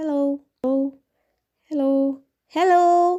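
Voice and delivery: plain delivery, words repeated. Testing a sound sensor's loudness reading, saying hello in a lowered, quieter voice. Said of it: "So maybe I lower my sound".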